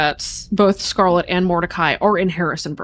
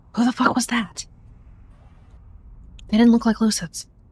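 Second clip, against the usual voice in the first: hissed whisper under the breath; 4 semitones higher than usual. Voicing Ash, who slips into the room with the player: hissing. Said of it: "Ash will kind of hiss to you".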